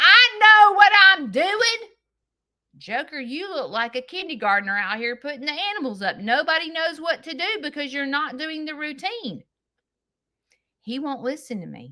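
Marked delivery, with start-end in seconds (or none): 0.0-1.9 mock slow, loud, angry, drawn-out insistent retort. Retelling his reply while he was mad: imitating him angry. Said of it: "he is so mad at me".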